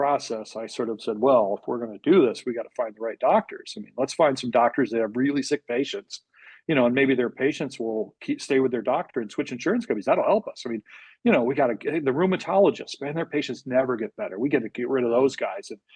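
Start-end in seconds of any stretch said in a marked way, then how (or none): 1.2-15.7 mock ironic, tongue-in-cheek sarcastic tone. Retelling own past words from an earlier process: retelling own sarcastic remark. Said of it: "I was trying to be sarcastic".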